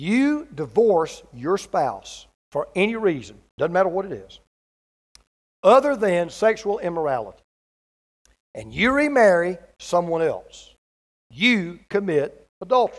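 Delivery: slow, deliberate and clear delivery. A speaker addresses listeners and wants them to hear this clearly: slow and clear. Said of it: "I want to say this slowly".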